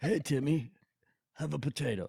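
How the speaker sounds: put-on zany, high-pitched old man voice. Joking about being a wacky old man handing out potatoes: put-on wacky old man voice. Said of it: "go all out with the grandpa-esque".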